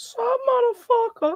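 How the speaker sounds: voice breaking, cracking into a very high pitch. Trading insults in a chat, the speaker's voice cracking. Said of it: "Ah, voice crack".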